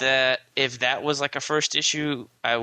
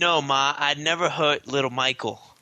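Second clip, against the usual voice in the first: put-on Brooklyn accent, given full effort; 3 semitones higher than usual. Describing a scene, the speaker quotes Uncle Paulie in their best Brooklyn accent. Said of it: "That was my best Brooklyn accent".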